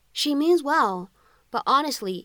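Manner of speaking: ordinary delivery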